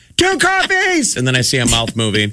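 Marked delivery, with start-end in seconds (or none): 0.2-1.2 mock very high, shouted, yelled delivery. Retelling calling out an order from the car: retelling a yell. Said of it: "So I'm just yelling out my order".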